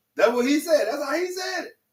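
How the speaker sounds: high-pitched, mocking, dismissive voice.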